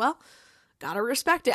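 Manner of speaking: ordinary talk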